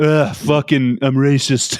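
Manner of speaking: put-on lazy, bored voice. Mocking a leader as a lazy fascist: lazy Trump impression. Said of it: "He's just like".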